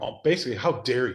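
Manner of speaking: put-on stern, rebuking tone. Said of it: "speaking to me this sternly".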